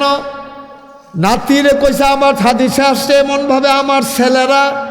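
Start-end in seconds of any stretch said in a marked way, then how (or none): 2.0-4.9 high-pitched, stern scolding tone. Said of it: "খুব ধমক দিতেন".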